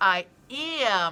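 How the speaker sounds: emphasis falls on the word "am". Reading a sentence where the word am is in italics: stress on am. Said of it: "It's like a stressed word in the sentence".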